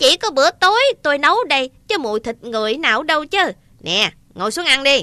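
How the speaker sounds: screechy, shrill, piercing giantess voice. Narrator reads the giantess's reply to the giant in a shrill giantess voice. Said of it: "Mụ khổng lồ cất giọng the thé".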